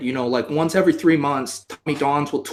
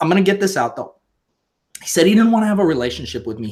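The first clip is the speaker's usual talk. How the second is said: emotional, rushed, pushing through rising emotion; 3 semitones higher than usual. Sharing a hard personal story, the speaker pushes on, getting emotional. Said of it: "Damn it, I am getting emotional".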